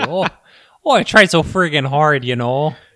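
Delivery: Minnesota accent, Canadian and Irish tinge. Repeating his own line after being told he had an accent; minnesota accent. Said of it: "that time I definitely did too".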